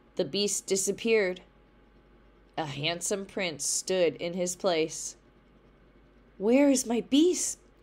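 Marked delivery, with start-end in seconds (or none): 6.4-7.6 gasping, much higher and louder. Beauty, finding the beast gone and a prince in his place, asks while gasping. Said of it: "gasped Beauty".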